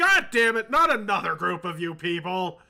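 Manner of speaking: giant's booming roar, very loud. Narrating a scene to the group, voicing an unseen speaker in a loud booming voice. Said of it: "you sort of hear a loud booming voice like".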